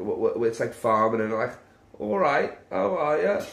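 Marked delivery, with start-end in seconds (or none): 2.0-3.4 accent from Norwich. Showing how a Norwich accent sounds after asking another speaker: attempted Norwich accent. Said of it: "can you do a Norwich accent?".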